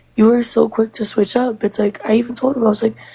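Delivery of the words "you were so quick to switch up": ordinary talk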